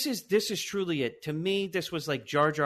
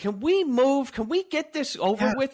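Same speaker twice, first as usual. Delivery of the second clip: mock screaming, higher; 10 semitones higher, 3 dB louder than usual. Retelling what was screamed at the TV during the movie: imitating own screaming. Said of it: "This is what I'm screaming at the T V".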